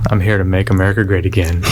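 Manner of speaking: normal talking voice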